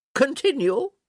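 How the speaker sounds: barked, snapped out. Reading a novel scene where a lady orders the reading to go on: barked. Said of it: "she barked".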